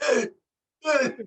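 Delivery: put-on strained throaty voice. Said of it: "You gotta strain your throat all the way".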